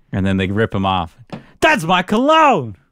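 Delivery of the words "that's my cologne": play-acted, loud, shrill, very high shout. Acting out a remembered scene about a beach-scented cologne, retelling a loud shout. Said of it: "that was really loud".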